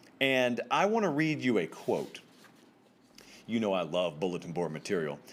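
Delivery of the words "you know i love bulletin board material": low, sarcastic aside. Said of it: "I say that sarcastically".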